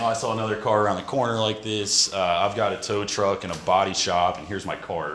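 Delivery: ordinary talk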